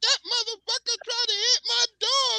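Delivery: put-on sassy girl voice, slangy, pitched very high.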